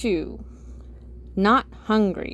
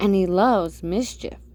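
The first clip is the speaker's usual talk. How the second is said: usual speaking voice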